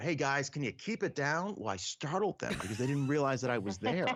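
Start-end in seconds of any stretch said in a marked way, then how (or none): 0.0-1.5 light, called-out voice. Retelling calling out to loud people in a theater: imitating own yell. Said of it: "finally I just yelled out".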